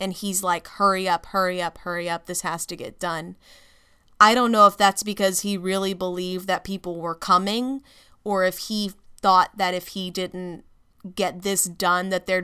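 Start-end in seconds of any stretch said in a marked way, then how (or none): none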